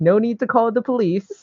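high-pitched calling out in a different voice.

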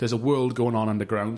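usual speaking voice

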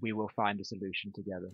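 quiet words kept close, hushed half-whisper. Speaking in character to Casimir while walking in, hand on shoulder: half-whispering. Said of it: "whisper to him".

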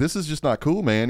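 ordinary delivery

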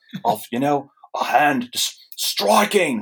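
put-on voice drifting slightly into Australian accent. Imagining what Morrison said about the book, try a Grant Morrison impression gone a little Australian. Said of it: "Morrison went Australian there a little bit".

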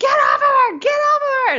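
very high, shrill, acted-out yell. Retelling a film scene, imitating Tippi Hedren yelling. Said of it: "slapping it on the butt and is yelling".

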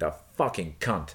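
put-on American accent while swearing. Showing how an American curses, to compare: imitating an American cursing.

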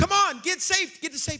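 very high, loud, desperate, urgent screaming. Retelling a dream while running from a wave, imitating screaming at the top of lungs. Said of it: "We're screaming for people".

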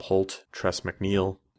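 ordinary delivery

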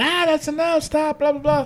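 high-pitched screaming. Retelling a wrestling show segment: imitating Stephanie screaming. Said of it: "you hear Stephanie screaming".

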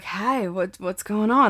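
imitated out-of-breath, breathless voice. Retelling a phone call with the other speaker, imitating someone out of breath. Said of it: "why do you sound like you just ran a marathon".

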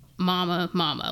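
normal talking voice

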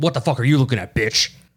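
put-on horror villain voice. Imitating how a horror villain talks: Freddy Krueger voice. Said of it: "Freddy Krueger, he talks like a shit poster".

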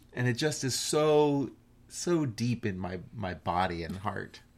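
ordinary talk

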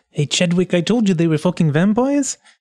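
hushed whisper. In a game scene, a character whispers to another character. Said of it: "I was whispering".

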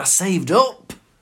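put-on irritated tone. Retelling his reply to a question about lottery money: imitating an annoyed reply. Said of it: "he got annoyed, going".

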